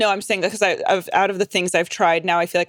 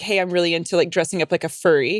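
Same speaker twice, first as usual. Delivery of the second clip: ordinary talk, nothing marked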